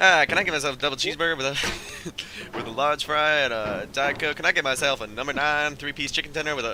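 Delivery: fast, loud auctioneer patter. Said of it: "Start talking like the auctioneer".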